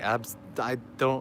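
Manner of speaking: slow, soft stuttering, sounding lost for words. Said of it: "I'm stuttering because I don't have words".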